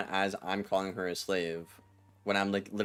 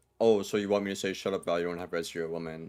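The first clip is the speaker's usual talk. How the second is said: put-on sarcastic tone of voice; 2 semitones lower than usual. Retelling own past words when baited into saying them: imitating own sarcastic tone. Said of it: "In, like, a sarcastic way".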